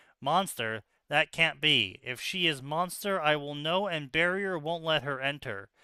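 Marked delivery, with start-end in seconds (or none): none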